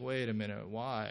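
put-on skeptical tone. Describing a child's growing doubt toward a parent: imitating skeptical questioning. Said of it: "this kind of skepticism".

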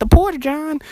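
put-on very high, loud northern US accent. Telling a story, speaker imitates a girl from up north, imitating a northern accent. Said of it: "I heard this girl from up north and she had this accent".

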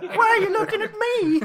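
high, fast, nervous voice.

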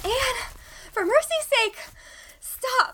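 very high, winded, breathless panting. Narrator reads Diana calling to Anne, panting. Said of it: "Panted poor Diana".

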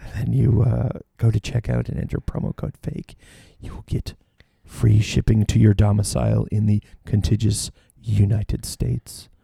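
whispery, soft, hushed public radio announcer voice. A host reading a sponsor ad, in an NPR voice. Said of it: "It's my NPR voice".

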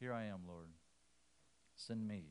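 soft, timid, meek and humble. Acting out Isaiah's reply to God's call: imitating Isaiah, timid and meek. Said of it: "Isaiah's response is timid and meek".

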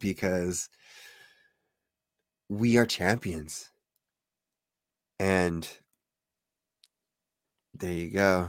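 getting teary. Recalling the moment they became champions, getting teary. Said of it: "I'm like getting teary up right now".

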